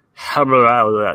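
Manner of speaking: put-on gibberish spat out in an older-sounding voice. Retelling a strange older voice heard on a baby monitor: imitating an older voice babbling gibberish. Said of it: "this distinct older voice that goes".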